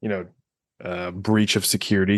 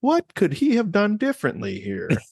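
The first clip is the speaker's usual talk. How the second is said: much higher, corny female narrator voice. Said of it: "she's just like".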